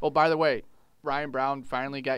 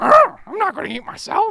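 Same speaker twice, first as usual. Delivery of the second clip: very high, booming, slow, drawn-out, frantic swooping squeal; 13 dB louder than usual. In a Kermit and Miss Piggy bit, answering Kermit: Miss Piggy voice.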